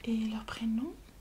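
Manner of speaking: whispered, play-acted librarian voice.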